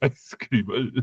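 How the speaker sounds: clumsy Korean accent.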